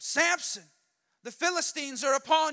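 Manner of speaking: high, calling-out yell. Retelling the story, acting out her waking the sleeping man: retelling a yell. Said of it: "And she yells at him".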